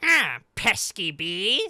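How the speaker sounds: weird whining cartoon bird voice, loud and swooping. Quoting a bird character's line from a series: weird whiny bird voice. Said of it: "bird with a weird whiny voice".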